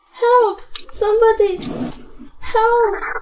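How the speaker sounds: high-pitched, tearful, sobbing, pleading voice. Calling for help while being held, crying for help. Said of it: "Don't cry".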